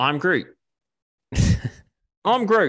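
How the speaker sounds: high, loud Australian accent. Riffing on Mel Gibson as Groot, the speaker tries the line: Australian-accented Groot. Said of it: "What if Groot's just Australian".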